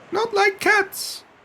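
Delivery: very high, shrill, passionate outburst. Reading the mouse's reply after Alice mentions cats: shrill, passionate voice. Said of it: "in a shrill, passionate voice".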